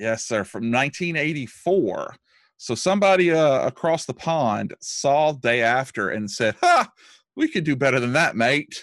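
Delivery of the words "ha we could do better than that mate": bad, fake put-on British accent, sing-song. Podcast co-host quoting filmmakers from across the pond, in a bad British accent. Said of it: "That's a bad accent".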